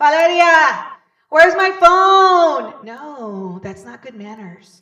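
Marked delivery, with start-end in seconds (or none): 0.0-2.9 very loud scream, the word "phone" drawn out. Showing bad manners at the table, a question screamed across the table. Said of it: "do you scream it across the table?".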